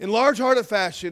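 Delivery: sarcastic. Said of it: "I'm being sarcastic".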